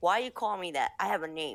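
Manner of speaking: mock angry, mad tone. Retelling a film scene, the speaker voices an Anglo-Saxon character's mock-angry retort. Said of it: "this Anglo-Saxon gets mad".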